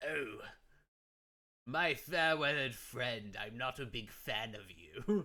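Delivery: loud, slow, put-on British accent. Recalling voicing a line while playing Ace Attorney, British accent. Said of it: "In, like, a British accent".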